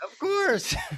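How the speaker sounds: playful mock squeal.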